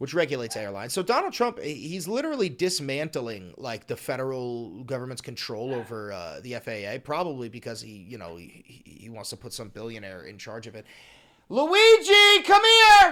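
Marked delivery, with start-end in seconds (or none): 11.5-13.1 shrill, high, very loud shout. Speaker interrupts talking to listeners to call the dog, yelling. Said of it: "I'm sorry about yelling like that".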